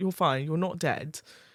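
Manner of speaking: ordinary talk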